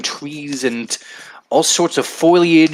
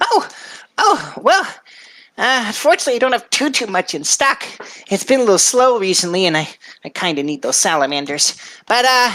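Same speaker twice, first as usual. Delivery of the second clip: little goblin lady voice; 5 semitones higher than usual. Voicing the goblin lady explaining her stock is low: Danae goblin lady voice. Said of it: "She is a little goblin lady".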